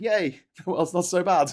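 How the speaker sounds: bright cheerful put-on voice. Imitating own cheerful travel videos: imitating own cheerful self. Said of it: "having a great time traveling the world and going".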